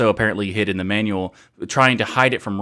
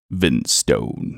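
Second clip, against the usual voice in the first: very low, big, deep baritone voice; 9 semitones lower than usual. Always saying the name this way, Vin Stone deep baritone voice. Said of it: "he has this really baritone voice ... I can't say it without doing it that way".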